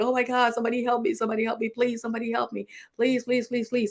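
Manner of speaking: mock panicked tone. Retelling going under in the Lazy River, retelling a panicked plea. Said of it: "and I'm panicking".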